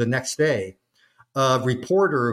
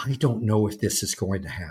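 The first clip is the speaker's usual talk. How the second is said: quiet, hushed stage whisper; 3 semitones lower, 4 dB quieter than usual. Retelling what the aide said on letting them in: imitating a half-whisper. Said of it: "he whispers to us".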